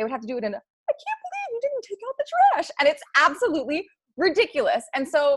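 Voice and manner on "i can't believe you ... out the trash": squeaky voice swooping up high. Retelling how a couple had to argue, complaining in a Minnie Mouse voice. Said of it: "they had to speak in a Minnie Mouse voice".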